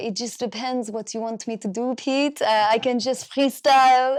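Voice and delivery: put-on French accent, own version. Asked to show accents, trying out a French accent for the other speaker. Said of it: "this is my version of a French accent".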